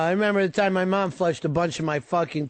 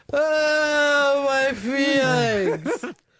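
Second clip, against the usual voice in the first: fake crying and wailing, much higher pitched; 8 semitones higher than usual. Pretending to cry while the others say it's not real: fake crying. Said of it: "Now you're just pouring water".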